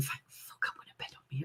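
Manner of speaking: breathy, hushed whisper under the breath. Retelling what he whispers while going upstairs to bed: imitating him whispering. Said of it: "I hear him whispering".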